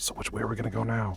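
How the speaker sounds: secretive, hushed half-whisper. A player half-whispers to a companion so the other two don't hear, half-whispering. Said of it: "And then whispering so the other two don't hear".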